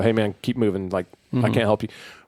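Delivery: ordinary talk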